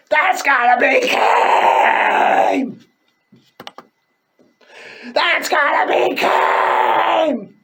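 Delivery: piercing, shrill, very high, stretched-out cry. Retelling a wrestling moment from memory: shrill Vince McMahon voice. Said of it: "the Vince McMahon voice say".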